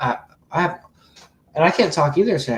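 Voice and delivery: halting, repeated-word stumble. Streamer losing his voice, apologizing to viewers, stuttering. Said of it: "I keep stuttering today".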